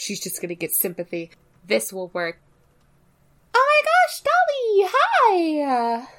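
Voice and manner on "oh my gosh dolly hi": very high, shrill, squeaky, slow, swooping sing-song. Voicing Reina greeting Dolly: very high-pitched voice. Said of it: "I didn't think Reina's voice could get any higher".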